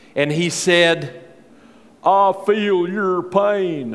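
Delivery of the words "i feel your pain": put-on voice, very slow, drawn-out, leaning on pain. Quoting a presidential candidate answering a heckler, Bill Clinton impression. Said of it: "That's my best Bill Clinton impersonation".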